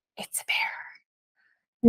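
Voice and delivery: hushed, breathy whisper. Retelling a friend turning around on the trail: retelling a friend's whisper. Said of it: "she whispers".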